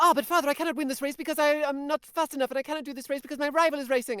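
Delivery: put-on fast condensed dub voice. Imitating characters in an old anime dub: imitating rushed Speed Racer dub.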